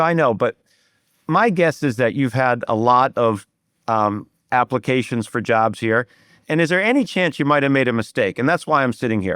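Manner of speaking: ordinary delivery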